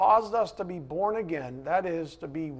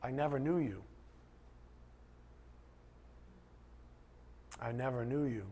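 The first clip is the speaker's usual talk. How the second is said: sorrowful, sad, hushed whisper; 5 semitones lower, 14 dB quieter than usual. Speaking to listeners about faith, quoting a spoken rebuke, retelling it sadly.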